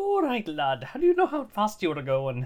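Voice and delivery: booming, shrill, high swooping burly Irish accent. Describing a 1930s Irish cop type, burly Irish cop accent. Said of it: "kind of like burly irish cop".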